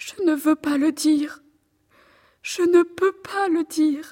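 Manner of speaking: weeping, in tears. Answering a stranger's questions about who hurt her, crying. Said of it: "ne pleurez pas ainsi".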